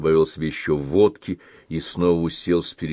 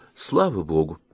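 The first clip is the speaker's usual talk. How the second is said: ordinary delivery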